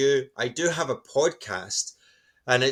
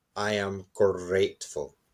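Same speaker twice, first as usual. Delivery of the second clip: gentle, soft-spoken, quiet Scottish accent; 5 semitones lower, 3 dB quieter than usual. Showing a bedtime self-talk ritual, quiet Scottish accent. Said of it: "in your quiet Scottish accent".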